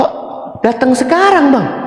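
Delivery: high, flustered woman's voice.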